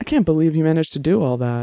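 ordinary delivery, nothing marked

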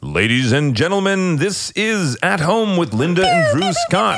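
very high, swooping, drawn-out sports announcer call. Opening the show, in a sports announcer voice. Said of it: "That's my sports announcer voice".

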